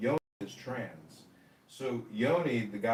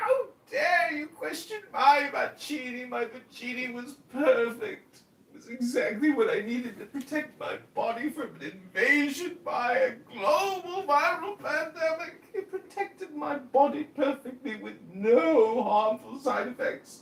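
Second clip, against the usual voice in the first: mocking put-on English accent, higher pitch; 4 dB louder than usual. Acting out the mockery once used in online rooms: mocking in a put-on English accent. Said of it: "the mockery".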